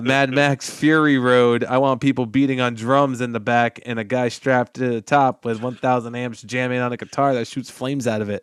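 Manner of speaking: normal talking voice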